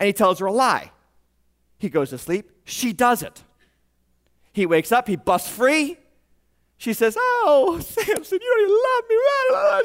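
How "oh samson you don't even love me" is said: very high, drawn-out, whiny crying woman act. Retelling a woman complaining to samson: imitating a crying woman. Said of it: "She does the whole crying woman thing".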